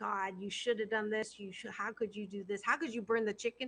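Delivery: judgmental, critical voice. Describing the different voices in one's head, acting out the critical one: critical inner voice. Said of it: "This the critical voice is".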